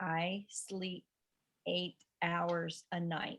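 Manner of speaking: slow, very soft, quiet reading. Speaker guiding a listener to read the statement aloud again: slowed down. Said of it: "but slow it down".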